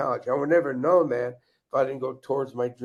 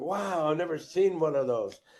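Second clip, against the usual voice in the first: mock thrilled, eager, excited tone; 4 semitones higher than usual. Retelling own words on seeing an officer's ring: retelling own excited remark. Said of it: "And I got all excited".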